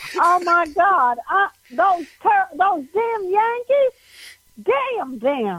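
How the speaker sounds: very slow, drawn-out, high-pitched Tennessee way of talking. Retelling a cab ride in Tennessee, copying the driver: imitating the Tennessee driver's talk. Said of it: "I better start talking like this".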